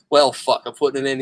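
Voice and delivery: ordinary talk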